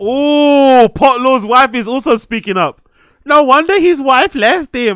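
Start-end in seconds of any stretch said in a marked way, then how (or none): 3.2-5.0 put-on Swiss accent with a jabbing tone. Voicing a comment from someone's wife, in a Swiss accent. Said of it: "In a Switzerland accent".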